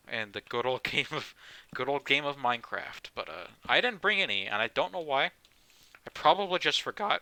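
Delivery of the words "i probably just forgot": cracking voice, breaking, high and slow. Talking about Minecraft in a video, with the voice cracking. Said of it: "voice crack".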